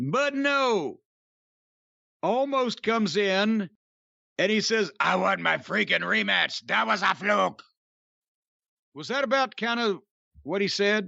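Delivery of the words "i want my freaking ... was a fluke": odd, rough, creaky, raspy made-up wrestler voice. Retelling what a wrestler said after a match: imitating Almost's voice. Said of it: "I don't know what that voice was".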